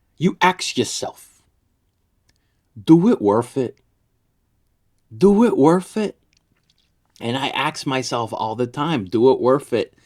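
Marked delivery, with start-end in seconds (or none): 0.2-6.2 put-on Haitian accent. Quoting a man to your listeners, imitating a very thick Haitian accent. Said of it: "He had a very very thick Haitian accent".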